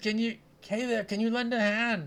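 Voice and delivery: loud high-pitched shouting. Voicing a farmer calling to passing adventurers for help: farmer shouting for help. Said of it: "He shouts".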